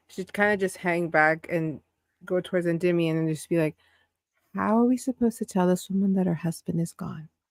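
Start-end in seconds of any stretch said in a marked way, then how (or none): 4.5-7.2 very quiet, hushed whisper. A player's character hangs back to speak privately to a companion: super quiet whisper. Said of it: "super whisper to only like elvish ears whisper".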